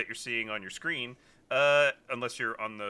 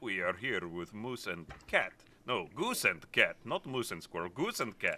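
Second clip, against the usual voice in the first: soft, bad put-on Russian accent; 2 semitones lower, 6 dB quieter than usual. A host introducing today's guests, in a bad Russian accent. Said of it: "Why are you doing a bad Russian accent?".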